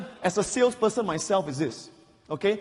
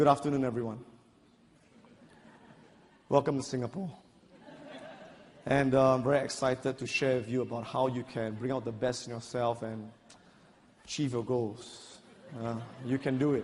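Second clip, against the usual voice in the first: very low, dull, flat, low-energy monotone; 9 semitones lower, 7 dB quieter than usual. Speaker showing an audience the wrong way to open a talk, boring low-energy delivery. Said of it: "I used a different tonality".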